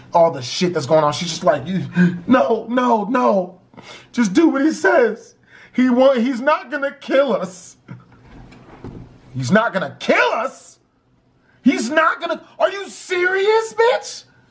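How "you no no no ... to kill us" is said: mock tearful crying through choked-back sobs. Retelling a bleeding woman's answer, imitating someone crying. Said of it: "Through the tears and the snot and the blood, she's choking back".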